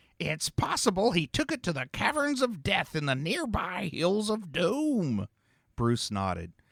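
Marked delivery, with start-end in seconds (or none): 0.2-5.3 high, put-on prospector character voice. Story narrator voicing a character who continues his prospector imitation. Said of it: "continued his prospector imitation".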